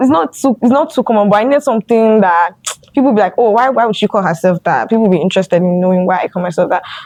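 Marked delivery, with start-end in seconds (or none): none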